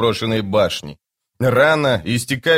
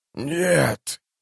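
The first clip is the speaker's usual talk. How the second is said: hoarse, rasped, drawn-out croak, horrified; 3 semitones higher, 4 dB quieter than usual. A character rejects what he has just been told, with a hoarse croak. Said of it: "— прохрипел Ягут".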